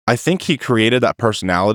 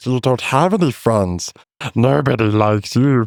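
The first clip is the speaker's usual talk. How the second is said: nasty creature voice, taunting and insulting. Retelling a scene, speaker voices Gollum mocking Smeagol: deep Gollum voice. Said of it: "I got a deep voice right there".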